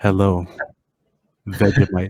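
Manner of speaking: fake, low, put-on seductive sexy voice. Answering a call for a friend as a joke: put-on sexy voice. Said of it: "Gotta get the sexy voice on".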